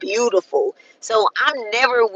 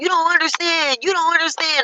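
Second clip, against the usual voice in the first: mock high yelling, same words repeated over and over; 8 semitones higher than usual. Retelling what a drunk passenger kept saying: imitating someone yelling. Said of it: "Just kept yelling at me like".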